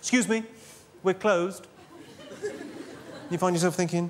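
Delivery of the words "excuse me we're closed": put-on haughty, snooty shop-assistant voice. Retelling what staff behind a department store counter say at closing, put-on snooty voice. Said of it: "quite a snooty voice".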